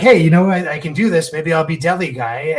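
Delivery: put-on bright, happy-go-lucky, cheerful upbeat musing. Retelling a movie character's upbeat thoughts: imitating a cheerful tone. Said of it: "And he's all cheerful".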